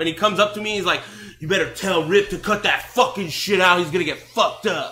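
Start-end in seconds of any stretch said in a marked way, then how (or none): 1.4-4.9 angry man's voice. Retelling the French guy's threat aimed at Rip: imitating an angry man. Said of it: "he was really pissed".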